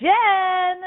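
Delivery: loud, high-pitched calling.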